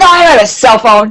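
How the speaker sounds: put-on furious, angry voice. Retelling what he said back to her, imitating his angriest voice. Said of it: "in the angriest voice he could".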